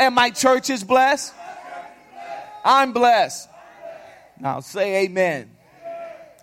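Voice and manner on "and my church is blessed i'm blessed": loud, high, full-throated shout. Leading the church in a declaration of blessing, shouting real loud. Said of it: "you need to shout that real loud".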